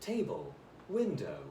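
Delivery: English accent, e-learning narrator voice. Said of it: "I have to do, like, an English accent".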